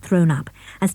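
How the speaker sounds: ordinary delivery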